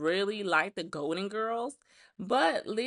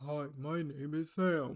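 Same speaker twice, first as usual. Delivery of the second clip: very deep, soft put-on voice; 5 semitones lower, 6 dB quieter than usual. Recounting how Sam performed for the judges; imitating Sam's put-on deep voice.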